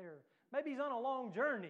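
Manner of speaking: sarcastic mocking tone. Retelling Elijah taunting the prophets: imitating sarcastic mockery. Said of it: "kinda being a little sarcastic and making fun of 'em".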